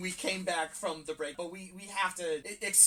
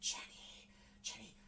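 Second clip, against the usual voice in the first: eerie, creepy, breathy, very soft whisper; 3 semitones higher, 15 dB quieter than usual. Describing a film scene where a voice whispers to Jenny: retelling a creepy whisper. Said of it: "a creepy voice whispering to her".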